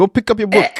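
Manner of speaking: fake Jamaican accent, high-pitched, loud and butchered. Imitating a mom telling her child to study: put-on Jamaican accent. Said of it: "I'm gonna try this Jamaican accent".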